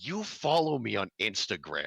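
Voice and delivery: put-on, condescending tone. Retelling what a woman said to a confused man; mock-condescending. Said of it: "also in a condescending way".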